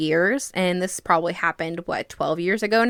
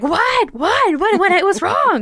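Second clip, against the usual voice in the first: frantic, very high, panicked shrieking scream; 13 semitones higher, 6 dB louder than usual. Retelling running into her mom's room as her mom screams, acting out a panicked scream. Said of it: "And I'm screaming".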